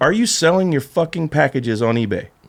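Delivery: plain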